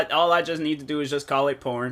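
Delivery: ordinary delivery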